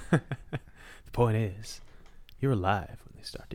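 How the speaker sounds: put-on hushed, breathy, whispered Cajun accent. Explaining predators, the speaker quotes Dr. Alan Grant in a Cajun accent. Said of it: "I don't know why I gave him a Cajun accent".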